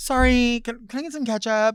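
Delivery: mock meek, hesitant. Recalling asking for ketchup at a drive-through, imitating own timid request. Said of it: "that's not saying it with your chest".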